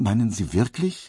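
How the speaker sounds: stuttering, stammering, downcast and dejected. A downcast man replies to another man's advice; stammering. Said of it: "stotterte er".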